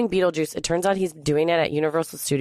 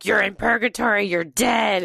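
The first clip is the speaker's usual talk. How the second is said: mock scream, pitched higher; 4 semitones higher than usual. Retelling what an actor screamed through a megaphone: imitating someone screaming. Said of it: "started screaming at me through a megaphone".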